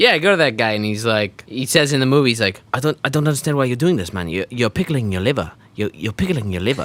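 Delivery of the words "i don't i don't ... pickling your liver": put-on, accented, Russian-sounding voice. Retelling what a doctor said in a movie: imitating a Russian-sounding accent. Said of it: "he sounds like he's Russian".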